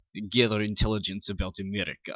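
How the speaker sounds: clumsy, bad put-on Russian accent. Speaker retries the line after admitting they're terrible at accents, bad put-on russian accent. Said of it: "semi-good accent".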